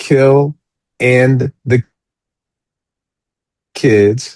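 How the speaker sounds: slow, deliberate, carefully enunciated words. Asked for final words, carefully saying the show's title, slow and deliberate. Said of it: "now let me say this slow".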